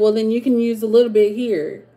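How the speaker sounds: put-on sarcastic tone. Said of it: "I got sarcasm for days".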